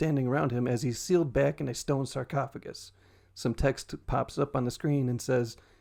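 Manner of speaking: plain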